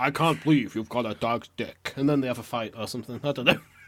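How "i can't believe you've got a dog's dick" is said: stern caped hero voice. Acting out Batman reacting to the Joker: Kevin Conroy Batman voice. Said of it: "Kevin Conroy's Batman comes and is like".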